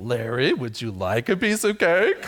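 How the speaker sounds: low, tempting, devilish voice. Playing the devil offering larry a piece of cake, devil voice. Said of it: "I should try to do my devil voice".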